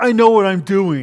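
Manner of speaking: mock-belligerent tone. Retelling a coworker's reply when you try to help, in a mock-belligerent tone. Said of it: "they say it in a belligerent tone".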